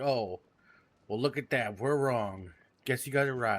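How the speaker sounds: acted condescending, humoring, talking-down tone. Retelling what the lawmen said after finding nothing: imitating a patronizing tone. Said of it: "in the most patronizing way".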